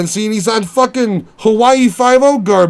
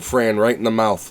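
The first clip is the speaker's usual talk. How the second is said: ordinary talk, nothing marked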